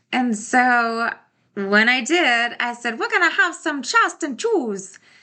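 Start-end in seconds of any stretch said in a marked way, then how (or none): 3.0-5.0 fast, pitched-up, tough-guy mobster voice. Serving homemade s'mores to the family as a joke: gangster voice. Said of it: "say in a gangster voice".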